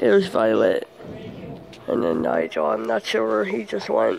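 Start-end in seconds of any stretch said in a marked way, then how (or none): 0.0-2.7 low, croaky, failing voice. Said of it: "It sounds like I'm losing my voice".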